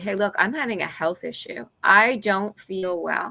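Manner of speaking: ordinary delivery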